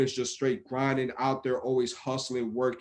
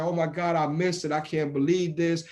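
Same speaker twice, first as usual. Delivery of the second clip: put-on tearful voice breaking through tears; 4 semitones higher than usual. Retelling a colleague's words after missing a deadline: imitating someone crying. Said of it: "she's just crying".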